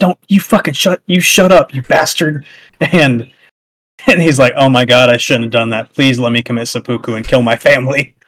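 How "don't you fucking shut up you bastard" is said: mock yelling, much higher. Retelling a story where a lord's follower yells at another lord; retelling a yell. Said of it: "starts yelling at Ishido".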